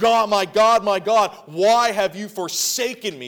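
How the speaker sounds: loud, high-pitched, anguished cry. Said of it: "cried out".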